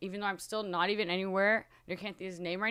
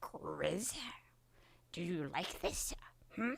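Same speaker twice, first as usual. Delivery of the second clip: creature voice that drifts and slips away; 10 dB quieter than usual. Greeting a person in the room with a Smeagol voice drifting toward Yoda. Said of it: "it turned from Smeagol to, to Yoda".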